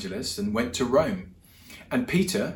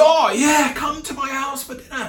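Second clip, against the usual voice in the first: very high, delighted, eager, joyful exclamation; 7 dB louder than usual. Retelling Zacchaeus accepting Jesus's invitation: imitating a joyful reply. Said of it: "hurries down the tree joyfully and says".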